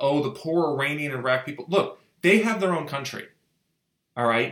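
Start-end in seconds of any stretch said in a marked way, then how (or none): none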